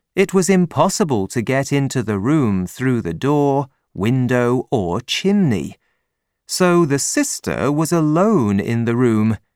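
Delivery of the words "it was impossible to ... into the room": ordinary delivery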